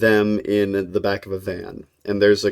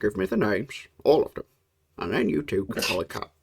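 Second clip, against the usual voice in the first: hushed, quiet, understated villain voice; 7 dB quieter than usual. Retelling an episode where the villain demands names, quiet villain voice. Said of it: "You do it so quietly though".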